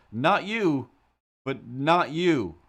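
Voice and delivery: loud high yell. Retelling yelling at a woman across the street, retelling own yell. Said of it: "looked at her and yelled".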